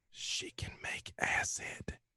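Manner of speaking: very slow, hushed whisper. Voicing a character who leans over to another: whispering. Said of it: "leans over and whispers to him".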